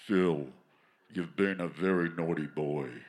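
put-on deep baritone voice. A speaker imagines God addressing him by name, deep baritone God voice. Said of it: "this really deep baritone voice".

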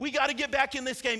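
nervous, urgent, loud shout. Retelling watching a losing game, retelling own yelling at tv. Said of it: "I'm yelling something different at the T V now".

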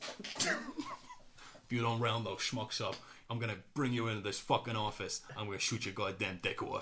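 put-on rough, gruff voice with New York accent. Asked to show the voice used for a girlfriend's cat: gruff New York police chief. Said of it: "a gruff New York police chief".

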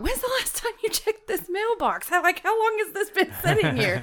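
high-pitched hollering, pitch swooping. Retelling opening an envelope in a parking lot: retelling a holler across a lot. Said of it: "hollering across the parking lot".

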